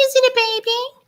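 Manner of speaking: put-on very high, slow, drawn-out cuddly baby bird voice. Imitating a pet bird's tone when it wants to cuddle: pet bird's cuddling tone. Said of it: "change his little tone of voice when he wants to cuddle".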